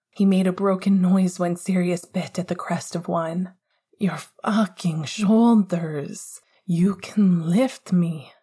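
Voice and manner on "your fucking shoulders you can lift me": dazed, delirious, slower. Sirius to Remus in a heated moment, delirious. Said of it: "delirious even to Remus's pleasure-dulled hearing".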